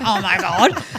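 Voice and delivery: put-on very loud, sulky, childish huff. Retelling storming off like a little child: imitating a childish huff. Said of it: "I stormed off like a little child going".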